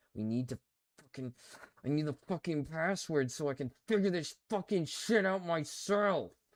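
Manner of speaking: rising, frustrated, fed-up angry outburst. Trying to find a password to figure it out alone: getting angry. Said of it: "I'm getting angry".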